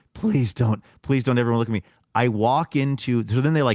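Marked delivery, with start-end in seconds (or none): 0.2-1.9 acted embarrassed pleading voice. Retelling being named in front of everyone: imitating his own mortified plea. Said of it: "how mortified I was".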